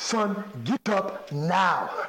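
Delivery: put-on very slow Nigerian accent. Retelling a fire station visit, the speaker quotes his father in a Nigerian accent. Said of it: "in his Nigerian voice saying".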